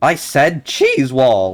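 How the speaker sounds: voice breaking and cracking on cheese wall. Repeating a shout a second time; voice cracking. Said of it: "That was an embarrassing voice crack".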